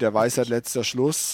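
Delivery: ordinary delivery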